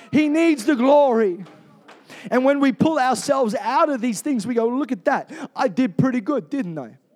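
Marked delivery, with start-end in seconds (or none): 4.7-6.8 put-on mock New York accent. Acting out what people say after being delivered, in a new york accent. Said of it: "It sounded like a New York accent".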